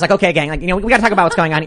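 really fast, rapid-fire, rattled-off chatter. Mocking how the people you supposedly can't trust talk, talking really fast. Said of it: "really fast".

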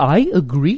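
odd, funny-sounding pronunciation of agree. Retelling how an old impression just said "agree" funny. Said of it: "he said "agree" funny, so I would just go".

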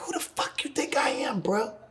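whispered, confrontational yelled outburst. Recalling yelling at Jay when they first met, retelling own yell. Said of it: "I yelled at him. I was like".

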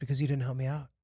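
composed, unbothered, calm and soft. Retelling a stranger explaining himself: imitating a calm explanation. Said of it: "calm demeanor".

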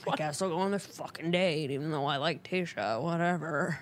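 put-out grumbling complaint. Retelling a contestant dressing before a date: imitating someone complaining. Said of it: "complaining the entire time".

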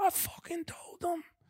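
hushed, breathy mob-boss voice. Speaker imitates the listener talking on the phone, Godfather voice. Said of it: "talking like in a Godfather voice".

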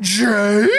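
put-on cartoonish character voice. Mocking a movie trailer moment where Thor calls out a name: Scooby-Doo voice. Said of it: "Sounding like Scooby fucking Doo".

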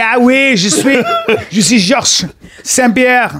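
put-on strong, thick Montreal French accent, laid on heavily. Showing the strong Montreal accent in a Georges St-Pierre voice: strong Montreal French accent. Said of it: "That's why I'm doing this. It's strong".

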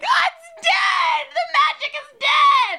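acted, very high, very slow, loud, drawn-out sobbing wail. Retelling videos of children holding the elf: imitating screaming crying children. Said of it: "screaming, crying".

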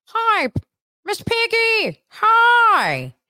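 hi pitched way up and stretched out. Comparing two characters, speaker does Kermit greeting Miss Piggy: Kermit the Frog voice. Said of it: "because Kermit's like".

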